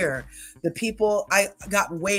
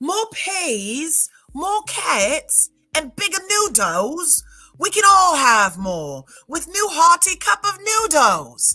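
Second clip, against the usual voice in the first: very high, shrill, swooping put-on English announcer accent; 9 semitones higher, 5 dB louder than usual. Quoting the TV commercial they copied to learn the accent, English commercial-announcer accent. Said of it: "that's how I learned how to do my English accent".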